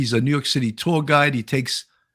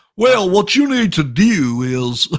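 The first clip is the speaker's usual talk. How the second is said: put-on Southern accent, higher and louder; 4 semitones higher, 4 dB louder than usual. Doing an impression of a person with a Southern accent: Dr. Phil impression. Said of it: "that was my Doctor Phil".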